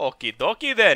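Eastern European accent on okie dokie. Role-playing a nation, replying to another player's border move: Eastern European-sounding accent. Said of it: "You sounded like Eastern European".

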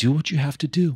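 mock steady, calming, very calm, gently high-pitched. Retelling what the other speaker once said to give confidence: imitating a really calm voice. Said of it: "in a really calm voice".

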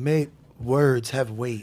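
quiet, low mimicked delivery. Quoting a man's advice in his own voice, imitating his voice. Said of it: "In his voice".

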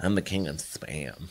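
soft, creepy, lurking put-on voice. Urging the other speaker to say it too, in a creepy voice. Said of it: "You gotta say it creepy".

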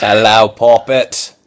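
mock British voice, put-on British accent. Greeting someone while trying to pass for a British man, in a fake British accent. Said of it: "I can pass for a British man".

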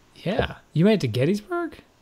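caught off guard, high, swooping, genuinely surprised. After the other player says they only reached Gettysburg in the game, surprised. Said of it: "You sounded surprised".

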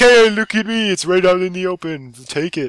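put-on Italian man's voice with Italian accent. Voicing a command post left right out in the open: Italian-man voice. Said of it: "Sounds like an Italian man".

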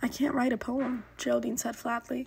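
ordinary delivery

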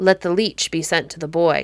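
ordinary delivery

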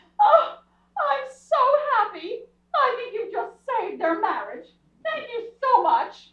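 joyful, tearful sobbing through the words. Asked why they are crying, answering while crying happy tears. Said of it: "Why are you crying?".

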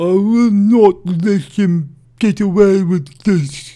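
booming, high character voice. Trying a best impression of a character's line: Charlos impression. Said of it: "I'm trying to do my best sort of impression of Charlos there".

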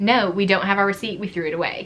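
normal talking voice

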